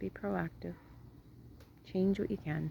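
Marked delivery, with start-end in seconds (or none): 0.0-0.7 much softer, quiet repetition. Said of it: "be proactive repeated".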